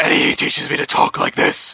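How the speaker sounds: dark, gravelly, rough, raspy voice. Showing friends how his speech teacher taught him to talk: raspy, darkened Batman voice. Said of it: "Raspy and darkened".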